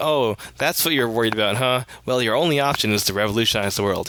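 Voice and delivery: ordinary talk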